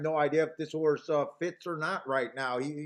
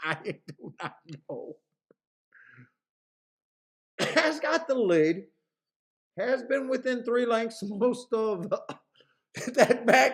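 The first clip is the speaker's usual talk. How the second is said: talking through laughter, higher; 6 semitones higher than usual. Watching a horse race with another speaker, laughing while talking. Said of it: "It sounds like I'm laughing and looks like I'm laughing".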